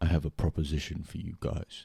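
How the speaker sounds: put-on deep Greek accent. Recalling what Chris said when they first started, in Chris's deep Greek voice. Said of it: "He's got a really deep Greek voice".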